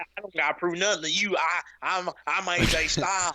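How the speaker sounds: put-on, imitated, rural Southern American accent. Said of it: "he got that little redneck Southern accent".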